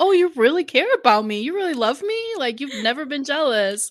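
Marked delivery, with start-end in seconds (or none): 0.0-2.3 overjoyed, touched, gushing, high delighted voice. Retelling how he reacted, imitating him being very happy. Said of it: "he's very happy".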